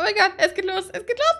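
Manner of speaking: thrilled. Streamer starting a Pokémon game: excited. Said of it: "ich bin so aufgeregt".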